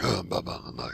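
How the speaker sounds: put-on grudging tone. Describing a character, the speaker mocks her in a grudgy voice. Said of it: "I have a very grudgy voice".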